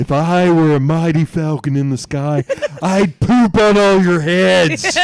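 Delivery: odd, silly, high, drawn-out hollering yell. Retelling a coach yelling at the JV team at halftime: imitating Coach LaCava's funny voice yelling. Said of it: "He talked funny".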